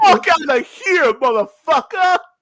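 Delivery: put-on shrill yelling, pitched way up. Bantering back at someone claiming credit for bringing something up, shouting. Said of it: "I ended up shouting anyways".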